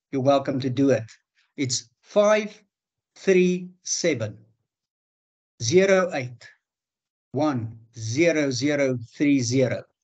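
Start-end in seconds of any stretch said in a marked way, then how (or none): 1.5-9.8 slow, halting delivery, one piece at a time with breaks. Speaker giving a number so listeners can note it down, speaking slowly. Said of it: "I'm going to say it slowly".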